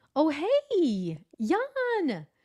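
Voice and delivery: high, swooping voice, "hey" stretched out. Recalling reacting to hearing the name jan, voice jumps up high. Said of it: "My voice goes up because you said it".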